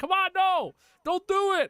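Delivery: very high-pitched, shrieked, acted scream. Retelling a reaction to a show's farewell scene: retelling own screaming. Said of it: "I was screaming".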